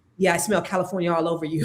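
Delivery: low, creepy, leering voice. Retelling what a guy said after grabbing her braids, imitating the guy's voice. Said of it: "he does like this".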